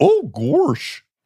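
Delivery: high-pitched cartoon dog voice, word gorsh. Doing an impression for the other to guess: Goofy impression. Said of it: "That does sound like him".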